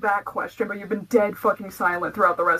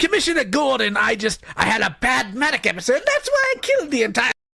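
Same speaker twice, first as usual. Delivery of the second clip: put-on villain voice; 4 semitones higher than usual. Playing a villain explaining himself to Commissioner Gordon: Joker voice. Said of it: "Is that Lio's mean girl voice?".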